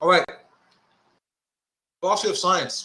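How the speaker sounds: talking with mouth full. Starting a class session while still chewing. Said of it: "Excuse me, I'm still chewing".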